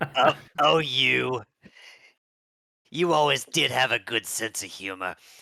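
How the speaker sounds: put-on old, sixty-year-old grandma voice. In an acted scene, a grandma character replies to a joke: sixty-year-old grandma voice. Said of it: "she's got the voice of like a sixty-year-old grandma".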